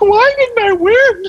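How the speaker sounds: play-acted tearful wail, very high, drawn-out, whining. Recounting a loser of a Halloween contest at the bar: imitating someone crying. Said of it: "she was like beside me crying".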